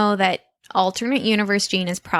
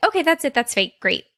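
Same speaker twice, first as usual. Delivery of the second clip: fast, hurried, rattled-off delivery; 4 semitones higher than usual. Retelling a character's line at the end of an episode: imitating Tina talking really fast. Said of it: "She says it really fast".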